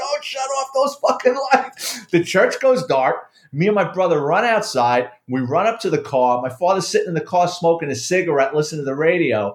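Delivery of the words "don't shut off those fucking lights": mock screaming, pitched very high. Telling a story about a man screaming in a church, imitating someone screaming. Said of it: "he's screaming in the church".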